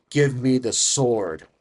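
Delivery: distorted demonic voice. A storyteller in a role-play voices a woman demanding the sword; dark demonic voice. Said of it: "It almost sounds like a dark, demonic voice".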